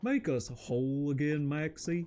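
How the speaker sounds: silly, goofy put-on voice. Streamer playing a game, talking in the goofy voice. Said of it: "talking in the goofy voice".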